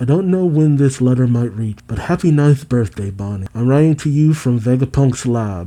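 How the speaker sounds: ordinary delivery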